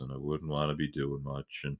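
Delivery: drained, very quiet, very low, flat mutter. Showing how they'd talk during severe calorie restriction, in a tired voice. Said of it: "I'd probably talk like this".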